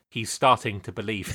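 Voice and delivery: very deep, low-pitched, softly spoken voice. Watching Neo do something cool, say the line in a Morpheus voice. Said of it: "I would say in a Morpheus voice".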